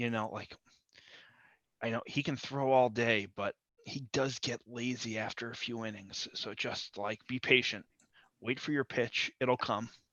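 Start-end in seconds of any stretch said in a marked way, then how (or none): 1.8-9.9 quiet whisper, quieter. Giving a player a quick piece of advice in a game: whispering advice. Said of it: "whisper, like, a quick piece of advice".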